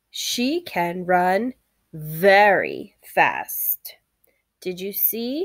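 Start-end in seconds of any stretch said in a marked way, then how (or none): 0.1-3.9 "very" given bold, exaggerated, drawn-out stress. Reading a sentence with very in bold print: exaggerated stress on very. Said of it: "I was sure to exaggerate it a little and read it a little bit more bold".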